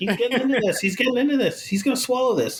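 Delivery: very high-pitched, bossy, insistent yell. A dad acting out his daughter shouting at him, imitating his daughter yelling. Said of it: "stop yelling at me".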